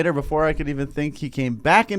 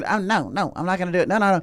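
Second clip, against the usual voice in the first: put-on stubborn, feisty child voice, repeated refusals; 3 semitones higher than usual. Retelling how a kid in your group refused; imitating a feisty kid. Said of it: "this kid was so feisty".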